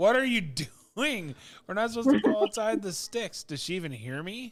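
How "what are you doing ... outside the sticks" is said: in-character, raised, high-pitched yelling. Playing a game, the speaker sees her go outside and yells at her: yelling in character. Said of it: "I'm gonna start yelling at her".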